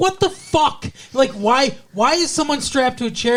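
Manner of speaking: angry outburst. Retelling a movie character walking in on a scene: imitating an angry outburst. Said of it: "he's all pissed off".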